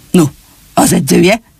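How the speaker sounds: plain reading voice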